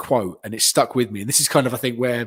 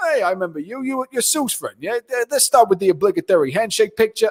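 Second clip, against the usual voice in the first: talking in a wrestling commentator's style; 10 semitones higher than usual. Retelling what the wrestler said on meeting: imitating Taz's way of talking. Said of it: "This is how he talks".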